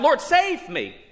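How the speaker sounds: shrieking, very high-pitched, pleading cry.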